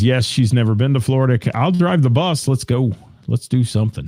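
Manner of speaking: ordinary talk, nothing marked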